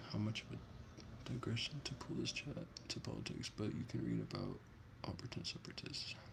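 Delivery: soft, hushed whisper. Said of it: "Wow, I am whispering".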